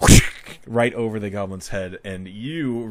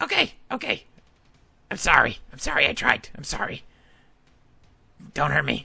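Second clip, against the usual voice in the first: pleading, begging goblin voice, higher; 6 semitones higher than usual. Voicing a goblin who sets down its sword, begging to surrender. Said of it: "He's trying to surrender".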